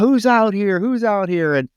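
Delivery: acted, very high, shrill, grouchy yelling. Retelling a grouchy neighbor's scene from a film: imitating someone screaming. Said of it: "he's screaming about".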